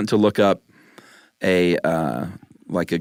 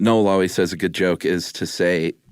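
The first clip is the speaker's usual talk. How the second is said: plain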